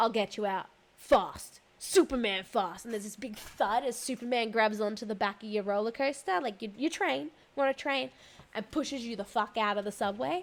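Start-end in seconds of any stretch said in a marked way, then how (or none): 0.0-2.8 booming, drawn-out giant superhero voice. Retelling a ride where a voice comes over the stopped train, giant booming voice. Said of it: "a giant booming voice goes over".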